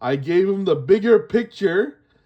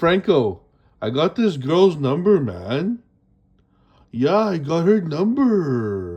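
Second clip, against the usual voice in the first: put-on smooth-talking voice, lower pitch; 4 semitones lower than usual. Retelling telling a friend about getting a number: retelling smooth talk. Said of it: "I started talking all smooth to Franco".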